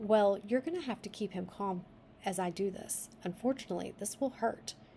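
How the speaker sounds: ordinary delivery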